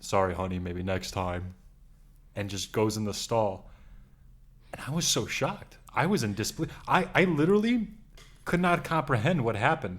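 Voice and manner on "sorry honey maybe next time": dark-voiced woman, pitched low, deep and dark. Retelling what a woman said before going into the stall, imitating a deep woman's voice. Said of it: "deep voice, deep voice, and she touches my face and goes".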